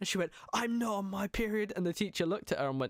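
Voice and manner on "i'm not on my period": put-on cross, indignant girl's voice, high and slow. Retelling a girl's reply in swimming class: imitating an angry girl. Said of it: "she was, like, really angry".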